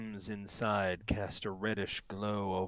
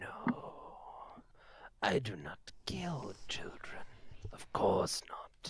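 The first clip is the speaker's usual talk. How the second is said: put-on crackling old lady voice, quieter; 3 dB quieter than usual. Voicing an old lady character answering an accusation, in a crackling voice. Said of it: "Her voice crackles like dry weeds".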